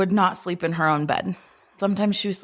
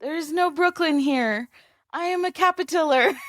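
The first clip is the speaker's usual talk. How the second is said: put-on small child's tiny, high little voice; 8 semitones higher than usual. Retelling a little girl under a blanket speaking at night, tiny little voice. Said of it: "we hear this tiny little voice say".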